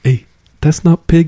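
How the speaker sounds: put-on whisper. Retelling a warning murmured at a Tongan feed: imitating a whisper. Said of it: "whispers to me, he's like".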